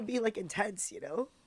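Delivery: crying while talking. Asking a friend, in the middle of a heavy conversation, why the tears keep coming. Crying while talking. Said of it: "why am I crying so much?".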